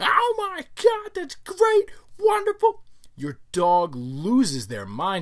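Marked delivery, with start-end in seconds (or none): 0.0-2.8 overly excited gushing scream, very high, drawn out. Speaker acting out an owner overreacting to their dog, mock overexcited screaming. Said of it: "you start screaming".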